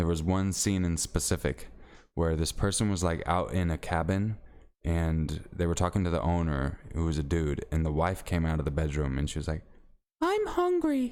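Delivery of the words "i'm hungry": put-on very high, girly female voice. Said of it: "And that's how I said it".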